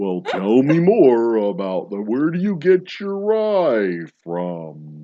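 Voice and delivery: loud, very slow plodding drawl, rye stretched long. Mimicking people who drag out conversations: slow Eeyore-like drawl. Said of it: "they always talk really super slow".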